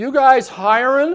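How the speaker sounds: high, very loud hollering voice. Retelling a kid hollering into his dad's car showroom; retelling a kid's holler. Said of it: "he just hollered into the showroom".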